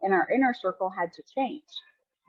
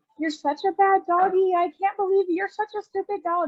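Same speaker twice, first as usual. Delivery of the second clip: mock sweet, nice, sugary voice, very high; 11 semitones higher than usual. Imitating people scolding a dog without changing their voice: mock sweet nice voice. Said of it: "they're still talking the same way".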